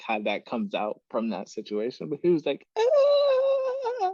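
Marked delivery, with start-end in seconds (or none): 2.8-4.1 strange, very high, loud yelp. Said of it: "I don't even know how you project that sound".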